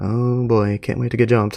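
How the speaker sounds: mumbled, muttering under the breath. Narrating a character who follows another into an alley, mumbling. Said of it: "follows him while mumbling".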